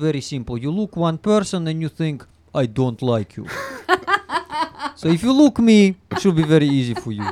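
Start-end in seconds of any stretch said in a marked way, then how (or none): 2.5-3.5 Russian accent with a disliking tone. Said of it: "How to make Russian face?".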